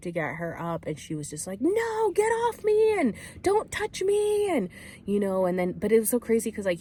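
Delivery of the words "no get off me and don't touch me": very high, very slow, drawn-out freak-out screaming. Retelling a woman refusing to be lifted up: imitating someone yelling. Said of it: "yelling and screaming and having this freak out".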